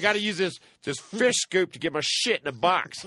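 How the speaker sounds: put-on irritated, embarrassed, high-pitched old man voice griping. Retelling an old man's complaint in the Army: imitating a pissed-off old man. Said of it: "He was all pissed".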